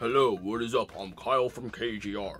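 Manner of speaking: deep, slow, host-style delivery. A speaker puts on a voice to greet viewers, fake YouTuber voice. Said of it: "let me have a fake YouTube voice".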